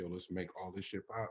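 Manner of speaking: plain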